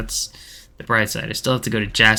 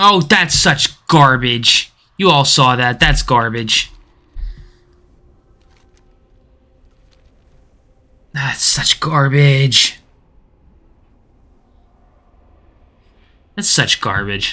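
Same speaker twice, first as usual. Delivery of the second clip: loud, slow, drawn-out, mad rant; 4 semitones higher, 6 dB louder than usual. Reacting to dying in a game fight just short of a kill: angry. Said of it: "I'm so mad right now".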